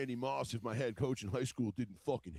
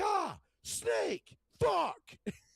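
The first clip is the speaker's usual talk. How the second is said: acted, very high, shrill, loud startled shriek; 5 dB louder than usual. Retelling seeing a snake while pulling weeds alone, retelling a startled yell. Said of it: "I just yells like".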